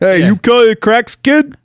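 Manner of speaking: loud, very high-pitched put-on Boston accent. Playing a part in an improvised two-person bit, in an attempted boston accent. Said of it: "Do we sound like Boston or what?".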